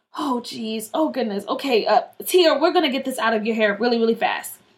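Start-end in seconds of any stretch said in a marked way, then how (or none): none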